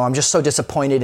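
ordinary delivery

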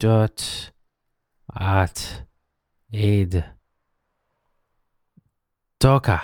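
slow, halting delivery, broken into separate syllables.

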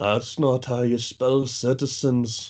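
deep voice from the back of the throat. Quoting an actor's movie line: David O'Hara voice. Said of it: "deep back of his throat voice".

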